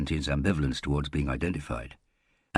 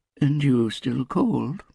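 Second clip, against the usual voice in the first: drowsy, just-woken sleepy voice, very high; 10 semitones higher, 5 dB louder than usual. Answering a late-night phone call, replying in a sleepy voice. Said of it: "Storla Anna said in a sleepy voice".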